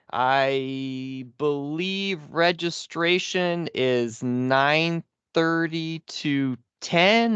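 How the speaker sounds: very slow, drawn-out, stalling delivery. Announcing an event schedule while pulling up the agenda, talking slowly. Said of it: "I'm talking slow".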